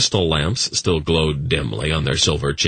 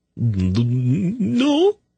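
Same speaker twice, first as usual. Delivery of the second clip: very high, squeaky, faltering stammer on "no"; 13 semitones higher than usual. Reading a story, a character answering a man's question, squeaky stammer. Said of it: "Sarah stammered in a squeaky voice".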